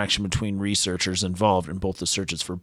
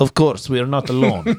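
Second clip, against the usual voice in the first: loud, put-on Russian accent; 4 semitones higher, 7 dB louder than usual. Prompted by another speaker to do the accent, put-on russian accent. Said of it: "You gotta do the accent".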